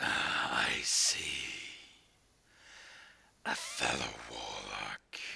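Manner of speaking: put-on raspy voice. Voicing a character in a role-play scene: raspy voice. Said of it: "it hurts to do that uh, raspy voice".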